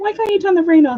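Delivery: very high, screaming, demanding cat voice. Retelling how the cat screams to turn the rain off: imitating a cat screaming. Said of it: "he screams at me".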